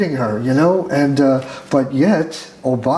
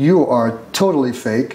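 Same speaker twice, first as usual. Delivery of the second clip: ordinary talk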